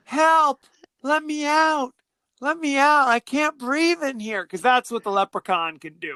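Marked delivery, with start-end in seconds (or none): 0.1-4.4 put-on small childlike little girl voice. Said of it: "like a little girl".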